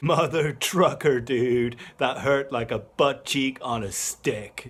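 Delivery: put-on voice of a young kid. Quoting a kid from a Vine video: impression of a kid from a Vine. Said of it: "That was a good impression".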